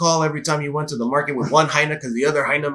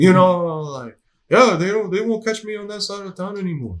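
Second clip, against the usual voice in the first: put-on old-timer man's voice, pitched up high; 3 semitones higher than usual. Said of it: "like veterano kind of sound".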